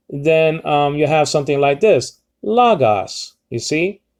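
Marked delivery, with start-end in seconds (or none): 2.4-3.3 lagos, pitch rising on the first o. Teaching how to say lagos, rising pitch on first o. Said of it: "you're rising uh, your pitch over the omicron, the first omicron".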